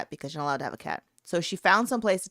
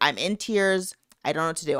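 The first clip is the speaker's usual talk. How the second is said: ordinary talk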